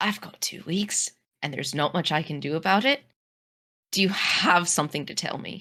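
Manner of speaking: voice dropped right down, low and hushed. Answering a character in the game, voice lowered even more. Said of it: "sort of lower my voice even, even more".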